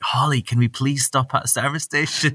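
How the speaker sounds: put-on excited pleading tone. Acting out asking a travel companion to stop: imitating own excited pleading. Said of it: "you'd find me getting so excited".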